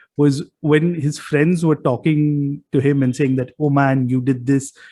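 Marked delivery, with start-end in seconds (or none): none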